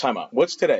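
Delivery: ordinary delivery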